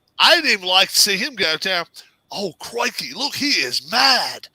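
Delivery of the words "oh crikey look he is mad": very slow, drawn-out call, every word dragged out. Retelling a crocodile scene, imitating Steve Irwin.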